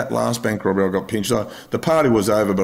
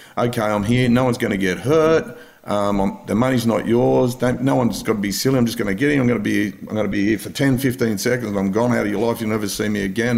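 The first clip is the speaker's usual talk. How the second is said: normal talking voice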